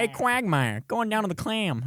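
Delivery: very high cartoon voice with swinging, swooping pitch. Challenged to give your best attempt at a voice you have never tried, do a Peter Griffin impression. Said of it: "I gotta get a little deeper, maybe".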